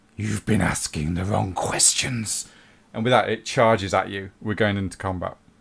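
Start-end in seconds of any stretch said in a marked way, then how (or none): 0.2-2.5 rough, torn, wrecked-throat monster voice. Voicing a bloodthirster as it speaks before combat, in a ruined throat. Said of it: "it says in a ruined throat".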